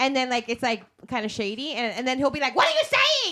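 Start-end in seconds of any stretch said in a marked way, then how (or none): 2.5-3.3 ear-splitting, very high-pitched, very loud blurt. Retelling how he asks about someone shady while the person's right there, really loud. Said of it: "Like really loud".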